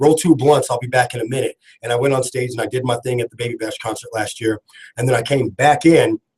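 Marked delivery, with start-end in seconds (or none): none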